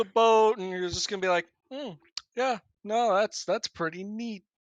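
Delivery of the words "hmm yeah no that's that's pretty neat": put-on, dry sarcastic tone. Joking about how the party will react to the crash site: put-on sarcastic tone. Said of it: "that was sarcasm!".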